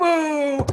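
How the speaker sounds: whole crowd booing, jeering, very high. Retelling how the crowd answered: imitating a crowd booing. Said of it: "everyone just kinda goes".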